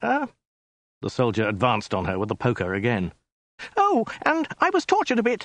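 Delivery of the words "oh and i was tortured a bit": shrill, very high shriek. Narrator reads the woman's line to Khan, shrieking. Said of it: "shrieked the woman".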